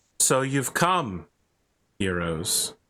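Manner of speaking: echoing, womanly, feminine voice. A voice greets the heroes as they enter a chamber, feminine voice. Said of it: "It sounds feminine and disturbingly familiar".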